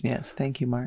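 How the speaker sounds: soft, worn-out, tired voice. Thanking the podcast's resident statistician for his work, in a tired late-night voice. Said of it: "What voice was that?".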